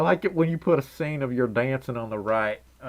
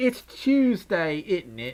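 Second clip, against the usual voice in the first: put-on stock British accent, put on; 4 semitones higher than usual. Joking about how British people talk: put-on British accent. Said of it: "British people be like".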